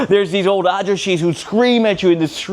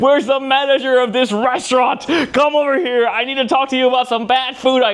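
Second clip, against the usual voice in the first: mock freak-out screaming, much higher; 5 semitones higher than usual. Retelling screaming at the night-shift nurses: retelling freaking out. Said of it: "I'm just like freaking out".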